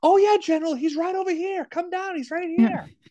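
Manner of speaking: very high-pitched called-out shout. Retelling a surgeon calling out to a general: retelling a yell. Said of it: "he yells to Hardy".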